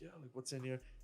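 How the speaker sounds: clumsy, really bad put-on Italian accent. Retelling what the airport security officer asked about the bag: bad Italian accent. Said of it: "I do a really bad Italian".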